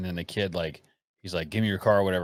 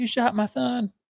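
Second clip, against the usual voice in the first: play-acted shrill scream, pitched very high; 3 dB louder than usual. Retelling a shooting story, acting out the shot man's mother: imitating a mom screaming. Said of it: "And his mom's screaming".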